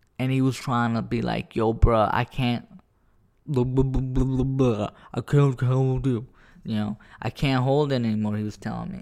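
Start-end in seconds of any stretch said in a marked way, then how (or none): 1.5-8.4 put-on mouthful-of-water speech, much slower. Acting out what his penis was telling him, mimicking talking with water in mouth. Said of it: "when you got water in your mouth, and you're trying to talk".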